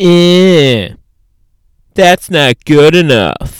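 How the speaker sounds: annoying, loud, drawn-out nagging voice. Imitating the inner editor voice every writer hears: annoying inner critic voice. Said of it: "that annoying voice".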